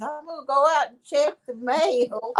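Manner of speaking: put-on voice of a tiny, little elderly woman. Retelling what she said back when they first moved in, little old lady voice. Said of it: "she's talking to this little old lady voice".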